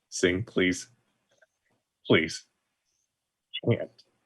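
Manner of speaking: hushed, soft pleading. A player's character begs into another character's ear, quietly pleading. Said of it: "I'm going to say quietly".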